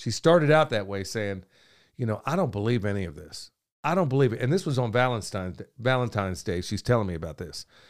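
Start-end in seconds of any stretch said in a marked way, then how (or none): 2.2-4.4 hushed, low, almost half-whispered. Retelling what was said to them in the barber chair: imitating someone half-whispering. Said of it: "almost a whisper".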